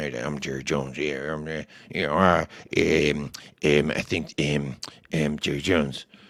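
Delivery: very low, slow, halting rambling delivery. Imitating how Jerry Jones talks now: really shitty Jerry Jones impression. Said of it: "it's actually a really shitty Jerry Jones impression".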